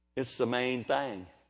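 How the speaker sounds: Kentucky and Oklahoma way of speaking. Speaker from Kentucky and Oklahoma shows how they say it, Kentucky-Oklahoma accent. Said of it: "I'm from Kentucky and Oklahoma. I say it like this".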